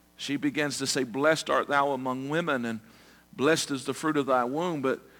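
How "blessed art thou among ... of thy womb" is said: normal talking voice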